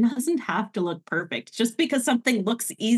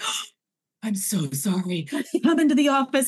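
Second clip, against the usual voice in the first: put-on apologetic soldier voice. Retelling how a drill sergeant spoke once his facade dropped, mock-apologetic. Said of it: "drill sergeant facade dropped".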